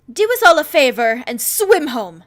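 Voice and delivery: crinkly, furious yell, very loud. Reading a story, a voice shouts after a fleeing candidate: crinkly, angry shout. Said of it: "a crinkly, angry voice shouts after".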